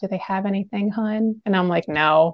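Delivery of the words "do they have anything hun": hushed, discreet half-whisper. Retelling how the speaker's mom half-whispered to them over the menu, half-whispering. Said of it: "you kind of like whispering".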